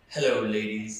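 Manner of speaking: put-on, very deep voice. Joking about how to speak into the mic: put-on deep voice. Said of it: "just the deep voice".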